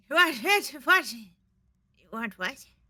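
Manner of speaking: put-on old goblin voice, loud. A sleeping old goblin is pulled out of a knapsack and woken, in an old goblin voice. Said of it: "You pull a sleeping old goblin out".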